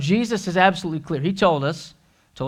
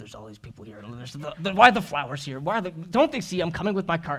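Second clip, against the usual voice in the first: mock mumbling muttered, quieter; 6 dB quieter than usual. Retelling a store trip pushing a cart, mimicking own mumbling. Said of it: "I'm just mumbling".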